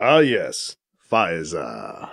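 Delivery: very low, slow, stretched-out drawl. [name], on the phone, answers BC's question about Faiza, drawling, name drawn out. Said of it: "[name] drawls, extending the sound of her name".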